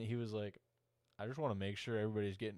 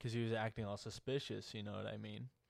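plain

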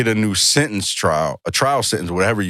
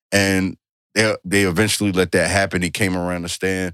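normal talking voice

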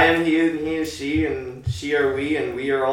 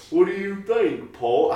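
deliberately bad delivery, pitched higher; 6 semitones higher than usual. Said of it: "do your worst Beatles impression".

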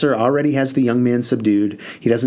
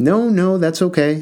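kindly, soothing, unhurried, pitched up; 6 semitones higher than usual. Narrator voicing Pastor Johnson answering after Spoonie's apology, said kindly. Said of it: "Pastor Johnson said kindly".

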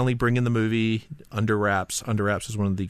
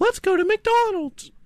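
very high falsetto voice; 3 dB louder than usual. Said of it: "do a [name] impression".

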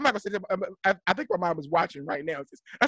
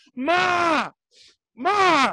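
high, loud yelling voice; 9 semitones higher, 4 dB louder than usual. Retelling walking into his mom's house intoxicated, retelling own yelling. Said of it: "I'm yelling".

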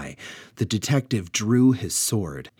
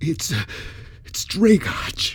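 frightened, fearful, much higher; 9 semitones higher than usual. Delvaux jumps back as the earth trembles and speaks in fear. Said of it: "jumped back in fear".

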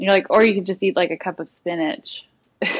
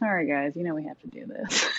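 mock sarcasm, lower, much quieter; 2 semitones lower, 10 dB quieter than usual. Imitating the person you're already listening to, apologizing to listeners, mock-sarcastic apology. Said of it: "hear the sarcasm in their voice where they're like".

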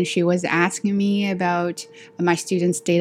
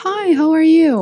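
put-on thick Australian accent, pitched very high and loud; 10 semitones higher, 6 dB louder than usual. Retelling a registrar's phone greeting: imitating a strong australian accent. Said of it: "with a very strong Australian accent".

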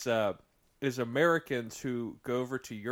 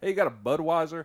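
put-on American voice; 4 semitones higher than usual. Showing how Europeans see Americans abroad, imitating an American tourist. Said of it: "that's how I feel like a lot of Europeans see Americans".

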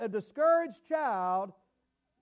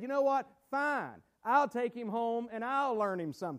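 put-on voice, heavy with sarcasm; 4 dB quieter than usual. Retelling what Edison's mom said to the teacher: sarcastic homeschool mom imitation. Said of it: "That's how homeschool moms talk. I'm being sarcastic".

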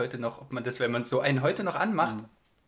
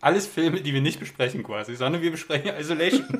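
loud, muffled speech through a full mouth; 2 semitones higher, 5 dB louder than usual. The speaker apologizes and keeps discussing films, talking with a full mouth. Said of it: "ich muss jetzt kurz mit vollem Mund reden".

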